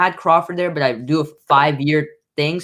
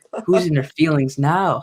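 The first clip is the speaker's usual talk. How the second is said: the calmest, most even voice. Recalling a dispute, quoting Artman's reply after Nika raised her voice, imitating Artman's calm retort. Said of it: "Like in the most calmest voice".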